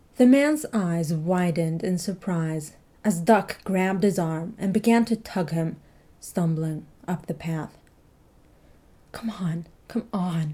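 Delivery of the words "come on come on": anxious, nervous, urgent pleading. Tugging a stumbling man up the path toward the bridge, begging. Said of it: "Duck begged".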